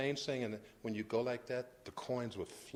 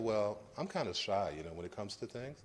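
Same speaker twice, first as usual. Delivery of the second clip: usual speaking voice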